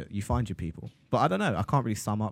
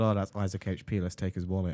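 plain

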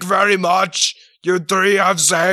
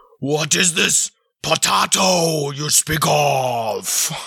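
slow, pompous, grandiose royal voice, drawn out; 3 semitones lower than usual. Narrating a role-play game, he answers the players as the Lord of Monkeys. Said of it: "I am the lord of all monkeys, big and small".

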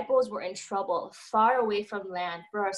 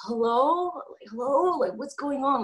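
slow, faked wide-awake voice; 4 semitones higher than usual. Retelling answering a call just after waking: imitating trying to sound awake. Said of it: "trying to sound like I haven't been sleeping".

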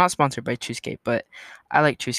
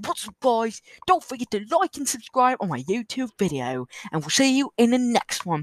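high, put-on British accent, man's voice; 7 semitones higher than usual. Imagining a British guy ending his YouTube video, in a British guy voice. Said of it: "I just imagine a British guy going".

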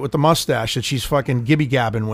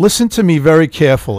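plain

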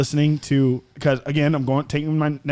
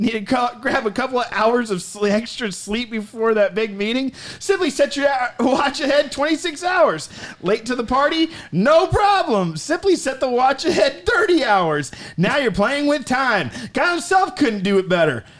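mock commercial announcer voice, higher; 10 semitones higher than usual. Reading a made-up sponsor ad for a backwards watch: mock commercial announcer voice. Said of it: "time for a word from another one of our sponsors".

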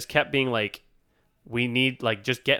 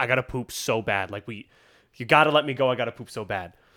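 mock pleading tone while crying, tearful. Retelling a stopped driver's excuse to an officer: imitating someone crying. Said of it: "crying and just being like".

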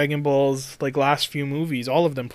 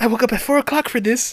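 very high, loud, squeaky put-on movie-star voice; 10 semitones higher, 5 dB louder than usual. Imitating a testimonial about the toughest thing ever done: Mark Wahlberg impression. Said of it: "Do that Mark Wahlberg again".

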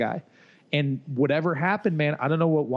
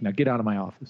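serious and stern, lower; 6 semitones lower than usual. Retelling what John said after shutting the office door: imitating John getting serious. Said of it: "got all serious".

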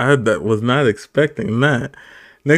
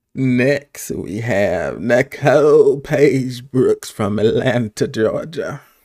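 put-on very slow, drawn-out Southern drawl, old lady voice. Host introducing the next contestant from Atlanta, in an old Southern woman voice. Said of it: "Who the fuck are you mimicking the voice?".

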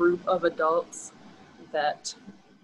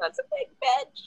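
put-on small, squeaky, very high prepubescent kid voice. Recalling an inner reaction to seeing a very large, muscular woman; tiny prepubescent voice. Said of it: "my like tiny prepubescent voice just going".

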